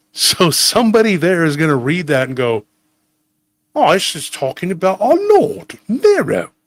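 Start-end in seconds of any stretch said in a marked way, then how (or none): 3.8-6.5 put-on British accent with sing-song melody. Acting out a Roman reading the letter: British accent. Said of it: "they always have to have a British accent".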